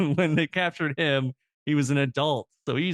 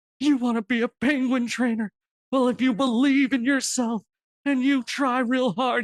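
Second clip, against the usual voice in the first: very high, choked-up, tearful, earnest, heartfelt voice; 10 semitones higher, 3 dB louder than usual. Retelling a man encouraging a girl, imitating him almost in tears. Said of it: "almost got tears running down his face".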